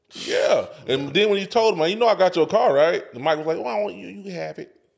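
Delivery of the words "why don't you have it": rough, creaky, scratchy put-on voice. Retelling what was asked about the car: imitating Mike. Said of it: "Why you had to do the voice?".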